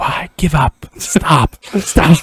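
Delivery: very slow, drawn-out whisper. Imitating fans whispering insults in one's ear: imitating someone whispering. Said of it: "Just whispering, like".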